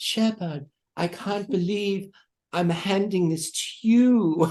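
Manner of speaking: put-on lovely British accent throughout, high and unhurried. Retelling what the trophy presenter said at a championship: british accent. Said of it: "in her lovely British accent and she said".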